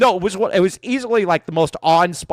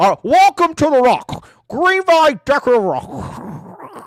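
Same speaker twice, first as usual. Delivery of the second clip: put-on Scottish accent, slow, drawn out, pitched up; 9 semitones higher, 4 dB louder than usual. Starting an ad for a decorative rock business with your co-host, do a Sean Connery impression. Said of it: "Sean Connery impression gets better and better".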